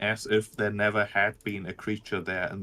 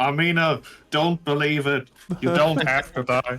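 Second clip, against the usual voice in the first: loud, high-pitched, in-character shout; 6 semitones higher, 7 dB louder than usual. Speaking in character to Amina, Torfin shouting. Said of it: "it is perhaps Torfin shouting".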